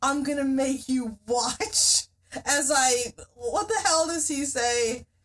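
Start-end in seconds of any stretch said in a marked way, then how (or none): 0.0-2.1 put-on menacing voice. Retelling a scene where a soldier threatens a man, retelling in a menacing voice. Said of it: "he says in a menacing voice".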